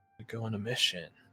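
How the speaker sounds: muttered stage whisper. Voicing a character passing on a secret tip: stage whisper. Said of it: "it's a stage whisper".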